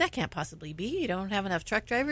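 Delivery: ordinary delivery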